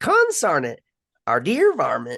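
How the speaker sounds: put-on loud, swooping, gruff old prospector voice. Describing an old talking style to listeners, the speaker demonstrates it: Gold Rush prospector voice. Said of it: "talking style was reserved for the grisly prospectors".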